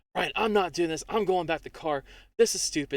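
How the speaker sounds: upset outburst. Retelling how she made a big scene in a crowd, mock-upset outburst. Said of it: "she just makes a big scene".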